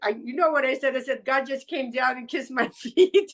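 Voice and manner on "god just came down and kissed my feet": put-on crying and laughing at once, tearful and awed. Retelling a phone call to the listener: imitating own crying and laughing. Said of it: "I'm crying and I'm laughing".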